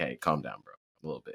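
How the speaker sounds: low, soft, hushed, mock soothing voice.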